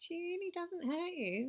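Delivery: nasty, mean little squeak, very high. Narrator reads Flick throwing Mela's words back at her, squeaky mean voice. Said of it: "In a squeaky mean voice".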